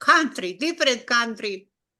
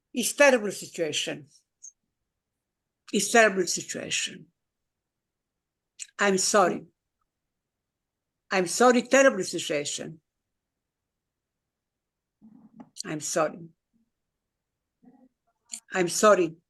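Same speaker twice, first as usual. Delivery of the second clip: moved, emotional, low voice; 4 semitones lower than usual. A speaker talking about human rights and the war in Gaza, apologizing: emotional. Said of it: "We must have made you emotional".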